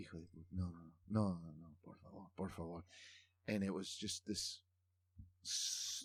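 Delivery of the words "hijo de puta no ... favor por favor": low, sullen, despairing groan. Retelling a father watching painful football highlights: imitating sullen despair. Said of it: "sullen attitude".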